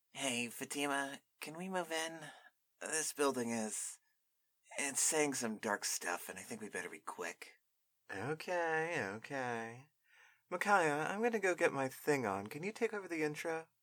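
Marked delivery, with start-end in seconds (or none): 0.2-7.5 soft, put-on nerdy character voice. A character urges a companion to move into the building quickly, nerdy voice. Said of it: "Okay, [name] seemed like kind of a nerd to me, / Okay, [name] seemed like kind of a nerd to me, so I'm gonna do that. / Okay, [name] seemed like kind of a nerd to me, so I'm gonna do that".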